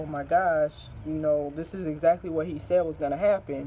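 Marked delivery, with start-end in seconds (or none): none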